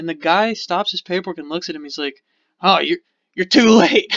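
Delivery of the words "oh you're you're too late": loud, gloating comic-book super villain voice. Retelling how a customer answered the couple: imitating a super villain line. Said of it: "like he's a super villain or something".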